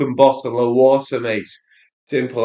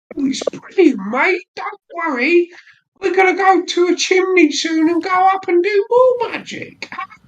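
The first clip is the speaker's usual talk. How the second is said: very high, terrible, laid-on fake British accent; 3 dB louder than usual. Mocking how Americans imitate British Harry Potter characters: imitating Americans' bad Harry Potter British accent. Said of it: "the worst impressions of Harry Potter".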